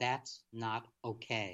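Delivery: flat, firm delivery, hard full stop, then silence. Showing what being clear sounds like: firm stop, long pause after okay. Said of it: "And I'm pausing for effect. That's not okay, with a real period, nothing else after that".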